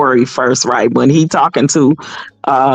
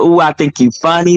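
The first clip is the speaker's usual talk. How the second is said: put-on nervous laugh, mimicked nervous chuckle. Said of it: "really a nervous laugh".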